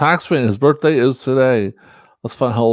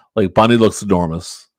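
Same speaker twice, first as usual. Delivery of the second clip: ordinary talk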